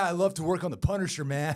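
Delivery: put-on laid-back bro voice. Imitating Jon Bernthal to the others, joking he sounds like a bro: Jon Bernthal bro voice. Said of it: "he sounds like such a bro".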